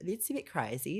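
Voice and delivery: slow, drawn-out put-on Australian accent. Retelling mom's reaction at family dinner to the news: imitating an Australian accent. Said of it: "she has an Australian accent".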